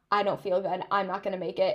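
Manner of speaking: plain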